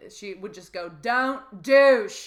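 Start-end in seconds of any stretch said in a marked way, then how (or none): 1.0-2.3 put-on blaring, very loud, high gym-teacher accent. Recalling the sex-education gym teacher's warning to the class, in the teacher's accent. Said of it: "Like she had this accent".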